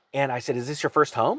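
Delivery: normal talking voice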